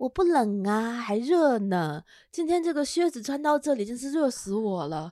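slow, drawn-out put-on young woman's voice. Retelling what a young woman answered the speaker, imitating her voice. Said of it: "我学的怎么不像？".

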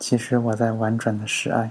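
ordinary delivery, nothing marked

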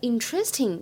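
interesting with stress wrongly on later syllable. Showing how many students say it: stress on later syllable of interesting. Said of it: "把重音读在后面。读成了interesting，这个一定是错的".

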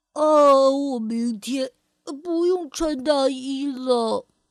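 words spoken through a yawn. Narrator reads a younger brother's line in the evening, yawning while speaking. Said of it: "他打着哈欠说道".

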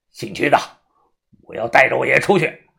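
husky, raspy, hoarse voice. Pinning a man against the wall by the throat, the speaker talks in a hoarse voice. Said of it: "他声音沙哑，眼睛通红".

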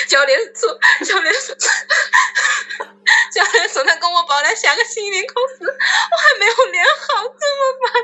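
mock crying while talking. Retelling how he complained to the principal about the exam, imitating crying while talking. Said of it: "然后他边哭边跟校长说".

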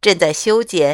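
ordinary delivery

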